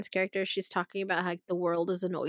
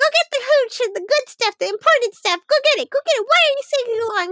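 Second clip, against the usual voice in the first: acted, piercing high-pitched voice; 7 dB louder than usual. Retelling a movie scene, quoting the character: shrill Jennifer Tilly voice. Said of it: "Jennifer Tilly's, like, acting voice is very shrill".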